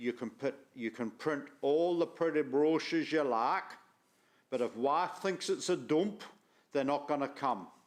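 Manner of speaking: put-on northern English Yorkshire accent. Quoting a man from a Yorkshire town on encouraging investment: Yorkshire accent. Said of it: "the guy said in his Yorkshire accent".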